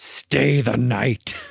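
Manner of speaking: unsettling, creepy growl, rough and creaky. Describing a film scene, acting out a man's line to Tina with a growl. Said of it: "and growls".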